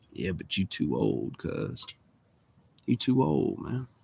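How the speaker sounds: whispered, hushed, breathy, tempting serpent voice. Telling how a serpent came out of the tree once he finished talking, serpent voice. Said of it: "that serpent comes out of the tree and goes".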